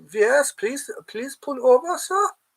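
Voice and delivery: very high voice with put-on German accent. Playing a bit about trouble on the autobahn, in a german accent. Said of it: "for having my German accent".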